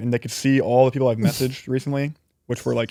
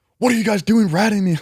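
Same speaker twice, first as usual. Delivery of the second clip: play-acted, loud, high-pitched all-out screaming; 8 semitones higher, 5 dB louder than usual. Retelling how a player's brother ran into his room: imitating someone screaming. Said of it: "comes into his room screaming".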